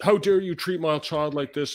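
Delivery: put-on screaming. Retelling how a mother screamed at the principal: imitating a mother screaming. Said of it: "started screaming at the principal".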